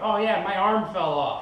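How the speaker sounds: high, excited, mocking gossipy gushing chatter.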